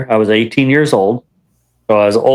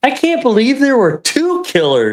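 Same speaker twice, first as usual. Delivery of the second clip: mock, loud, carrying, swooping blurt; 12 semitones higher than usual. Retelling a man walking past a queue, retelling a loud remark. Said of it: "the guy says really loud".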